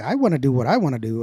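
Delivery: ordinary delivery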